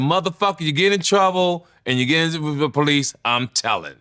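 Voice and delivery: stern, no-nonsense, severe tone. Retelling what the speaker's mother said about trouble: imitating mother's warning. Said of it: "I'm gonna do exactly how she said".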